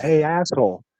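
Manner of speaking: mock sarcastic, smart-ass tone. Acting out greeting someone rudely, imitating a smart-ass tone. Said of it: "In a smart ass type of way".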